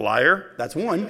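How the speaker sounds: side remark, kept private. Picturing what Jesus might say quietly to the man: Jesus muttering under his breath. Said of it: "under his breath going".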